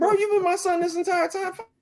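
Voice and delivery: high, mock sobbing, pleading tone.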